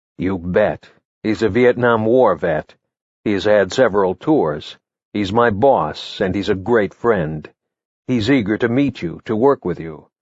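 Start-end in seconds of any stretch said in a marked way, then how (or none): none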